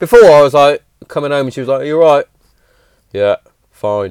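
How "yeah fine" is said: put-on flat, low, listless, lackadaisical monotone. Recalling how she used to answer him when he came home, imitating her monotone reply. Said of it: "Very monotone, very lackadaisical".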